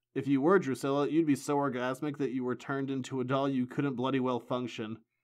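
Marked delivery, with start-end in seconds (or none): none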